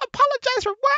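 very high, loud, shrill caricature squawk. Retelling a game encounter where a player refused to apologize, imitating the other player. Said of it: "that's my imitation of him".

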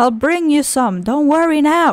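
ordinary talk, nothing marked

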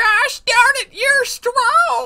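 put-on elderly woman voice. Voicing a kid character handing over an apple, in an old woman voice for a kid. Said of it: "the kid sounds like an old woman".

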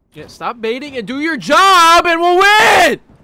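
very high, very loud, shrill, drawn-out yell. Player yelling at a teammate during a match, yelling. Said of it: "I didn't mean to yell".

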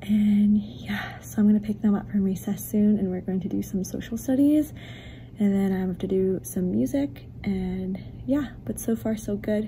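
speaking quietly and softly, hushed. A teacher vlogging secretly between classes, hoping not to get caught, talking quietly. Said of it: "I'm talking quietly because I don't want to get caught vlogging".

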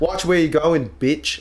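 attempted British accent. Asked to repeat a quoted insult in a british accent: attempted british accent. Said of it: "Australian accent".

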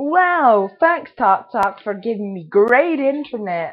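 very loud, mocking, fake-grateful tone, swooping pitch. Talking to viewers in a video, sarcastic. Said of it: "Hashtag sarcasm".

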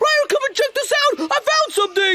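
shouting. Calling a companion over to see something just found, yelling. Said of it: "Quit yelling".

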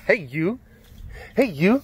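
play-acted challenging attitude. Retelling how Jeremy called out, imitating a challenging attitude. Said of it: "And then he started getting attitude".

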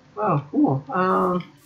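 high-pitched voice. Reacting after making it to daytime in a game, voice going high-pitched. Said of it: "why is my voice going so high pitched there?".

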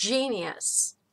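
GEnius, first syllable stressed, vowel reduced.

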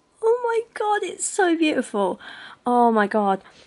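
loud, high, overjoyed, gushing rapture. Speaker reacts to a story about the sun and the earth, overjoyed. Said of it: "I'm so happy right now".

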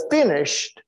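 heavy stress on the word 'finished'. Explaining the sealed book to listeners, stress on 'finished'. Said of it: "Emphasis on finished".

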